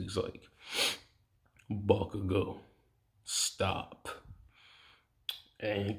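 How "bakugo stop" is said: commanding, authoritative deeper voice, quieter. Voicing Deku telling Bakugo to stop bullying kids: deeper voice with authority. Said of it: "I'm trying to emphasize on the authority".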